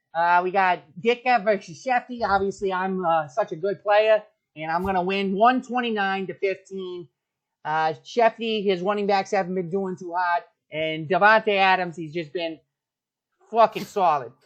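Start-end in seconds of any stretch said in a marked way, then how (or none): 10.7-14.2 slipping into a Boston accent. Speaker previewing this week's matchups, slipping into a Boston accent. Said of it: "I'm going into a Boston accent".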